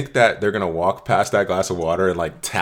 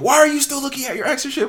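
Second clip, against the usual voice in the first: put-on, shrill, very high-pitched yell. Acting out a partner who yells about scrolling past an ex: imitating someone yelling. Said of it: "she starts yelling at you".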